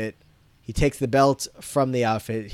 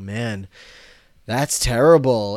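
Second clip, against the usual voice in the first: deeply patronizing, talking-down, condescending tone; 4 dB louder than usual. Recapping a TV scene, voicing Nick looking back at Kurofsky, mock-condescending voice. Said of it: "in a very condescending voice".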